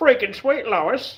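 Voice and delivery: offhand, awful clumsy sitcom cartoon dad voice. Asked whether he does a good Peter impression, he tries one: Peter voice. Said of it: "You do a good Peter impression?".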